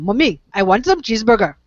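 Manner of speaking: put-on Indian accent. Speaker tells of a boy asking his mommy for a cheeseburger, in an Indian accent. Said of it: "the Indian accent".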